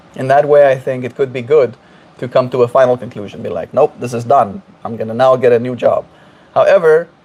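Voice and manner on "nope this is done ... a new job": ordinary talk, nothing marked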